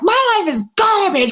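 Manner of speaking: acted-out furious, very high, shrill angry yelling outburst. Retelling how they yelled at the sky and the lake in front of him: retelling a yell. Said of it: "And I'm yelling".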